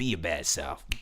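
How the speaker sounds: put-on sassy, attitude-filled woman's voice.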